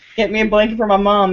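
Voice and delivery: ordinary talk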